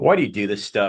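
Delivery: acted-out yelling, screaming. Retelling a confrontation with a man from Uzbekistan, reenacting yelling at him. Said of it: "I started yelling at him and screaming".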